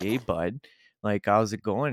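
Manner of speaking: put-on, drawling, drawn-out Canadian accent. Showing how a canadian would speak: put-on canadian accent. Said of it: "if I were to speak like a".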